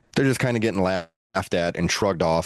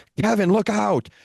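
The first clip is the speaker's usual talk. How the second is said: yelled out loud at a high pitch. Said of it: "Jericho yells".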